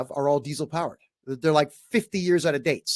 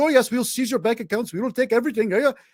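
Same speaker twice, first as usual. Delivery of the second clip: put-on Indian accent, pitched higher; 8 semitones higher than usual. Quoting a man who threatened arrest over taxes, imitating an Indian accent. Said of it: "he had an Indian accent".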